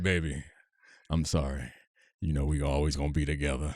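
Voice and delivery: put-on assumed voice dropped very deep. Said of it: "he brought the boys the man voice also, where it's like".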